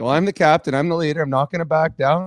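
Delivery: plain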